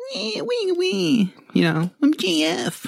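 very high, swooping, drawn-out whine. Mocking how another speaker sounds; imitating JF, whinier. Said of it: "I think maybe a bit more whinier".

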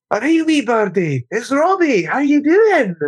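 fake Scottish accent, very high and slow. Retelling what Alex said to a spitting bird, put-on Scottish accent. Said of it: "he started putting on a Scottish accent".

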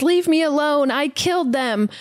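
called out in a high voice. Recounting a scene where Lucy yells through a door at a creature, imitating Lucy yelling. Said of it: "she like whimpers and says".

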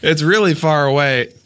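ordinary delivery

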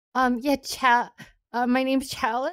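tearful, talking while crying. Answering whether this is how her name is said: crying while talking. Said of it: "Why are you crying?".

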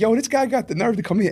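skeptical, incredulous voice.

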